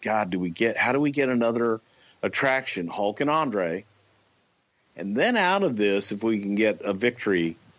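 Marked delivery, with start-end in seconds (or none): none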